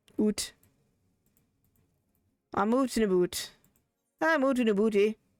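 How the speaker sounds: Minnesota-style accent. Player joking while playing a game, speaking in a Minnesotan accent. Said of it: "more akin to a Minnesotan accent".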